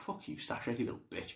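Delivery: hushed, whispered mutter under the breath. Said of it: "I'm like".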